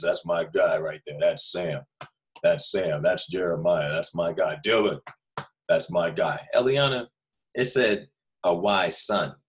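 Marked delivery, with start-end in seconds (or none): 0.0-6.4 extra-deep, boastful, proud dad voice. Telling listeners how their father will react, imitating a dad with extra deep voice. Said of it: "his voice gets extra deep".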